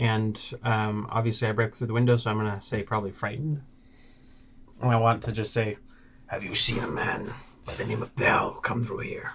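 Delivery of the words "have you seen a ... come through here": very deep, dropped character voice. Questioning a commoner in character while calling on an imposing aura: really deep voice. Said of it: "your voice gets really deep".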